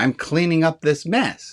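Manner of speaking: play-acted proud, self-satisfied, pleased-with-myself tone. Retelling answering a cross manager mid-project, imitating proud past self.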